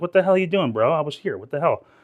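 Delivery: put-on, pissed-off, irritated and indignant griping. Imitating another streamer annoyed by this stream: imitating House of Hounds pissed off. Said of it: "He's probably all pissed off".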